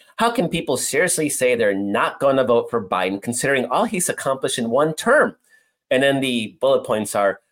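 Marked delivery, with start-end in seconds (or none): none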